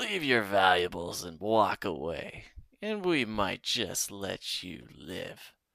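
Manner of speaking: rough-edged, raspy calling-out voice. Reading a story where a hidden bandit calls from the trees: raspy calling voice. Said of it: "A raspy voice calls out".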